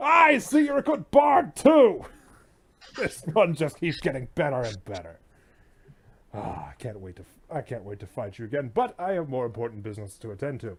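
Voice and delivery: loud, swooping roar of laughter through the words. Voicing a monster who roars with laughter at the insult: roaring with laughter. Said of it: "before suddenly roaring in laughter".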